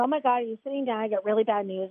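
ordinary talk

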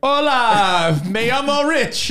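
slow awkward Spanish. Joking about trying the same interview in Spanish: imitating rambling in bad Spanish. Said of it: "like me trying to do it in Spanish".

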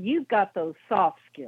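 falling pitch, voice trailing off on skills. Repeating exactly how he said it to you: falling pitch on skills. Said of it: "But he said it like this, ... The voice went down".

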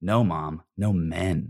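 dead-level monotone, flat, very slow and drawn out. Retelling Caitlin's reply to their mom's matchmaking, imitating Caitlin's flat deadpan. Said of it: "Caitlin very flatly went like".

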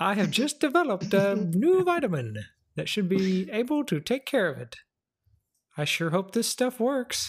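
terrible, high, laid-on Italian accent. Retelling the story of Dr. Mario, speaking as him: bad Dr. Mario accent. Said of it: "Done in the worst possible accent by me".

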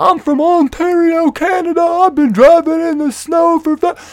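high, loud, angry screaming. Retelling an argument about driving, the speaker voices the other man, retelling a scream. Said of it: "And he screams back".

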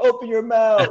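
shrill, very loud, high, barked drill-sergeant yell. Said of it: "So someone yelling at me".

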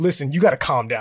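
put-on mortified voice. Retelling an uncle in uniform telling a saluting dad to stop: imitating a mortified uncle.

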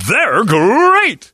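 loud, high-pitched belting. Reading a listener's joke, voicing Tony the Tiger: Tony the Tiger voice. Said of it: "Tony the Tiger comes out and goes".

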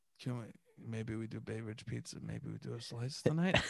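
put-on tipsy whisper. Retelling how a partner comes over when drunk: imitating a drunk whisper.

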